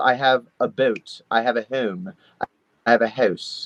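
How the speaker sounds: put-on South Jersey accent, slow, long drawn-out vowels. Imitating how everyone in south jersey talks: south jersey long vowels. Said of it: "everyone there says very long vowels".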